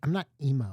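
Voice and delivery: imitated sassy, snappy little tone. Retelling a good friend's little sister's reply, imitating a sassy little tone. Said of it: "her saying it in this little tone and sassiness".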